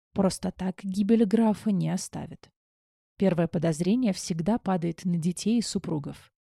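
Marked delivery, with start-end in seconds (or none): none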